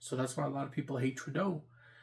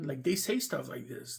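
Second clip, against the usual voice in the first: ordinary talk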